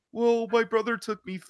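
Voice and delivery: very high-pitched cartoonish voice. Speaker recounts Ethan answering Jacob, doing Ethan in a Morty voice. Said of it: "I'm giving Ethan Morty's voice".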